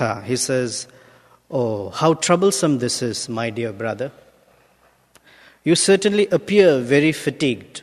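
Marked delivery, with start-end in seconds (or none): 1.5-7.8 sarcastic, said in a sweet, nice-sounding way. Reading a king's words to a tired palanquin carrier: acting out a sarcastic king. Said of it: "Maharaj Rahugana becomes sarcastic".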